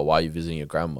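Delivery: put-on intimidating, rapid delivery. Retelling how questioners try to catch the speaker out, imitating fast intimidating questioning. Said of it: "they say it in an intimidating tone as well, and like fast".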